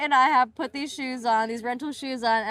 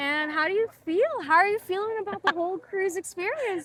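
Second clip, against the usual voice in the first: sweet tone with higher pitch; 5 semitones higher than usual. Interviewing Amy about her first cruise, in a sweet voice. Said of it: "hasn't used that sweet voice with me".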